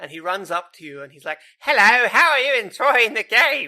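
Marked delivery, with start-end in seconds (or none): 1.6-3.7 very loud, high, annoying game-character voice. Describing a game character who asks for feedback, imitating annoying NPC voice. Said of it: "He has a really annoying voice and a really annoying accent".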